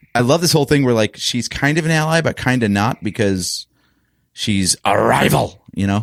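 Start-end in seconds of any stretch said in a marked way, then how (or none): 4.4-5.7 bad put-on cartoon character voice, slow and rough. Speaker discussing a show quotes a callback, bad Clone Wars character impression. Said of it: "a bad voice impersonation".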